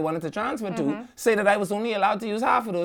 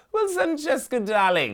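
horrible, fake put-on British accent; 7 semitones higher than usual. Imagining what to say when sitting at the table, horrible put-on British accent. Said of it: "these horrible yes. British accents".

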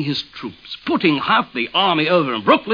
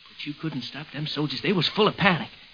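plain

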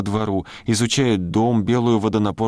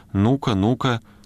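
plain

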